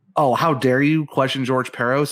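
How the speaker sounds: ordinary talk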